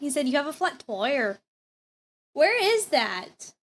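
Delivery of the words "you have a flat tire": imitated Canadian accent. Imitating how the officer said tire: imitating a Canadian accent. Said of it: "He sounds like he's Canadian".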